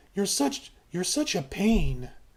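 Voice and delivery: gentle, sweet, affectionate, playful teasing. Showing how she would say the line: sweet and playful. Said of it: "she's doing it playfully".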